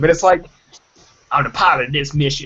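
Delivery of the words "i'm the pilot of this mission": clumsy, bad put-on Southern American accent. Recounting a failed accent attempt, repeating the pilot line in a bad Southern accent.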